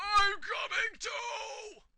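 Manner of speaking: put-on very high, loud shouting old man voice. Explaining a card whose cost includes a shout, the speaker shouts in an old man's voice. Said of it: "with an old man's voice".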